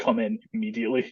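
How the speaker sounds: usual speaking voice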